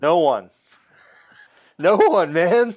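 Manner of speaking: voice breaking and cracking on the words. Answering who you would wish that fate on, voice cracking. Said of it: "My voice just cracked just thinking about it".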